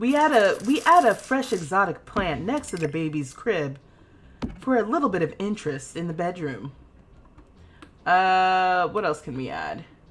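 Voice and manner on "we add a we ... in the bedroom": tv narrator voiceover in an announcing voice. Announcing the next decorating step like the Decorating Sense voiceover host. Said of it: "she announces what they're gonna do next in the voiceovers".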